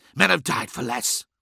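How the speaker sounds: hissed through the teeth. Bordan, hand on his hunting knife, warns Redwayne, hissing. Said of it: "hissed Bordan".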